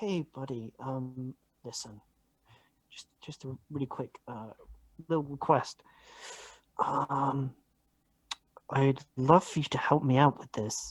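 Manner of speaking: hushed stage whisper. Asking another character in a corner for a quick favor: stage whisper. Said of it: "I'm stage whispering".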